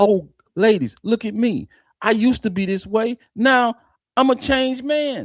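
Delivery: taunting, high parody voice. Imitating a man the speaker is describing: mocking imitation of him. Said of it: "And that's what he sound like".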